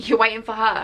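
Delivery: put-on nasty, snide tone. Retelling what a boy said about her best friend: imitating a nasty tone. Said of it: "Don't use that tone".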